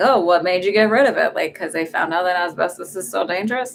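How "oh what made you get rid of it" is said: play-acted, lightly sarcastic, ironic, knowing tone. Retelling own question to mom, imitating a sarcastic tone. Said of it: "I kinda sarcastically said".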